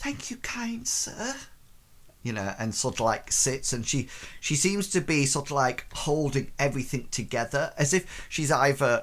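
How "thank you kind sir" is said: timid, meek, hushed, quiet, very high voice. Describing a performer sitting down and speaking, imitating Gulliver's meek quiet voice. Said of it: "says in a very meek and quiet voice".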